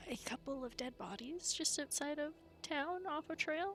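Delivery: quiet, kept-down voice. A player's character approaches someone to report something: speaking quietly. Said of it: "she's gonna say like the next part kind of quietly".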